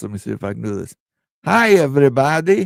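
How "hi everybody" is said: loud cartoon doctor voice calling out hi. Trying out the voice someone else is known for, Dr. Nick Riviera voice. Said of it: "his Doctor Nick Riviera voice".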